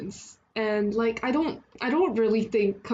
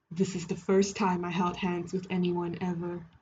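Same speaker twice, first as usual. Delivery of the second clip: put-on deep voice, only somewhat lowered, low and soft; 4 semitones lower, 5 dB quieter than usual. Redoing a line after deciding to try a put-on deep voice. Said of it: "let me try a deep voice".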